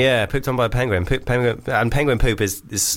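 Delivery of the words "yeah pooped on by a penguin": ordinary talk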